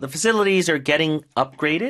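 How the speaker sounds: slow, careful model reading.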